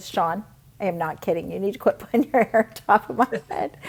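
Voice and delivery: put-on firm, no-nonsense, very stern, unraised voice. Retelling what a husband once said about hair on his head: imitating a stern warning, not raised. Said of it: "he said to me very sternly".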